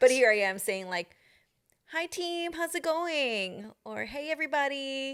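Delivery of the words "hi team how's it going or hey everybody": high, drawn-out, fake-cheery, very slow young woman's voice.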